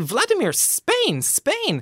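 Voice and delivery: put-on, anxious, very high, swooping pleading voice. Retelling pointing south at a companion, acting out an anxious plea.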